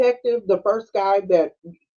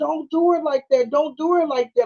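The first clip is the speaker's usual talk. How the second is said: high, frantic pleading cry; 8 semitones higher than usual. Retelling how you screamed at the thing while watching her, retelling a scream. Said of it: "I just kept on screaming at the thing".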